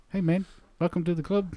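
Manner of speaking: very high voice. Recounting hearing a giant rock man talk, the speaker does his line in Korg voice. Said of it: "you can do that voice really well".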